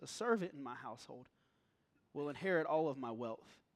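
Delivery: put-on disappointed voice. Acting out Abram's reply to God's promise: Abram's disappointed voice. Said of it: "hear the disappointment in Abram's voice".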